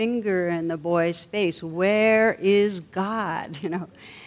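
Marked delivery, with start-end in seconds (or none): 1.6-3.6 mock firm, scolding, demanding clergyman tone. Telling a joke where a clergyman questions a boy, in a mock-stern raised voice. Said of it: "the clergyman raised his voice even more".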